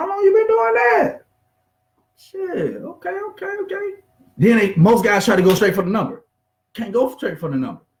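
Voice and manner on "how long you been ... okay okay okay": much higher voice with rising pitch. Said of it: "My, my, my voice going up".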